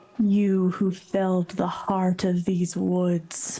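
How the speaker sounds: tormented, anguished voice, ringing and echoing. Narrating a scene, the speaker voices a woman calling out: anguished echoing voice. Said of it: "anguished voice echo out, saying".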